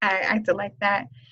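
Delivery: normal talking voice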